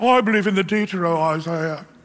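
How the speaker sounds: fake British accent sounding clever. Imitating cardigan sweater-wearing college professors, in a put-on British accent. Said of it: "why do you say it with a British accent?".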